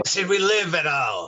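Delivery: put-on slight Scottish accent creeping in. Voicing a character in the game scene: a little Scottish accent. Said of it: "that's a little Scottish, sorry".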